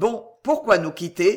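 plain

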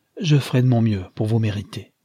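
ordinary delivery

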